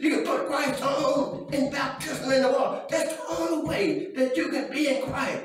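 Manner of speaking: exultant, excited shout in a preaching style.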